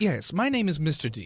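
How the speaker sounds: put-on proper British accent in butler style. Asked his name, the butler answers in a British butler accent. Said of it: "a well-dressed butler with a British accent".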